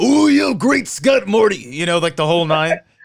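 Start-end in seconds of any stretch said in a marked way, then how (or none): 0.0-1.6 big exaggerated reaction, high and rough. Pitching an old Macho Man as Doc, overreacting old Macho Man voice.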